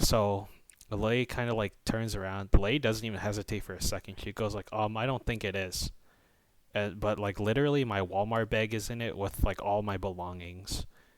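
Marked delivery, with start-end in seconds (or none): 4.7-5.9 put-on defensive tone. Retelling what a lady said when asked about the cart: imitating a defensive reply. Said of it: "She just instantly got defensive".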